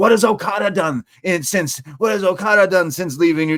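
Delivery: high yelled scream. Retelling someone screaming at the start of a match: imitating someone screaming. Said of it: "then screams like".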